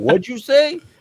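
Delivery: put-on shrill, loud, high-pitched New York accent. Describing how a New Yorker would react to the word, imitating a New Yorker. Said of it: "say that to a New Yorker".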